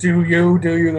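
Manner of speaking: scary, spooky, eerie lurking put-on voice. Retelling what others say to someone hiding behind guards, imitating a creepy, scary voice. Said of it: "in their creepy, scare eshy voice".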